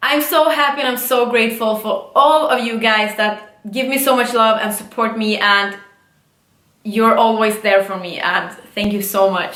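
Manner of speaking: emotional, on the verge of crying, teary. Answering questions for an audience, emotional and close to tears. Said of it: "now I'm moving on because I'm gonna cry".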